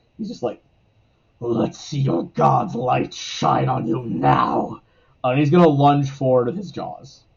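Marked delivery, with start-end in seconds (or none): 1.5-4.8 savage, bestial, snarling, beastlike creature voice. Voicing a creature speaking to Avon just before it attacks, in a much more bestial voice. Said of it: "in a voice that's like much more bestial".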